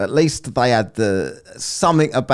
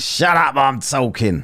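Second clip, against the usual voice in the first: mock-angry shout, higher pitch; 3 semitones higher than usual. A commentator repeats Dave's outburst after playing it, mock-angry shout as Dave. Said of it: "commentator repeats Dave's angry outburst".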